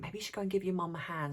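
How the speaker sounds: quiet, sideways half-whispered aside. Retelling what dad half-whispered about helping mum: imitating a half-whisper. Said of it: "whispered to me".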